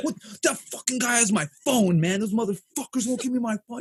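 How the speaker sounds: mock agitated freaked-out outburst, high and panicky. Retelling finding someone passed out on the stairs, imitating him freaking out. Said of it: "He's freaking out".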